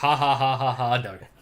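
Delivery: put-on game villain laugh. Answering with another favourite line, imitating Ganon laughing. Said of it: "I like when he goes".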